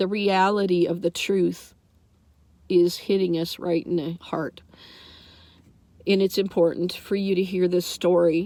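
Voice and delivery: speaking through tears. Telling listeners about the ossuaries you saw and apologizing for your tears, crying. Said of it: "I'm crying tears".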